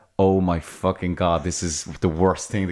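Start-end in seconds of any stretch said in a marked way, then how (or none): none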